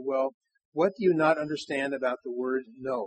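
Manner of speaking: normal talking voice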